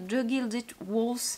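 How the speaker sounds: badly done, mangled English accent.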